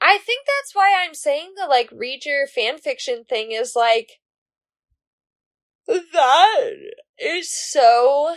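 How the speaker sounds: speaking through a yawn mid-sentence, drawn out. Tired speaker chatting with a co-host, yawning while talking. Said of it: "sorry, I'm yawning".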